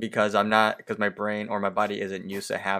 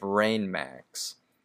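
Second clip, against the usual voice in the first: usual speaking voice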